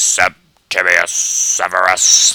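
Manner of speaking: robotic, robot-like voice. Saying a Roman emperor's name the way it should sound, in a robotic voice. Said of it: "You have to say it like some robotic voice".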